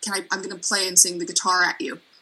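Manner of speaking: ordinary talk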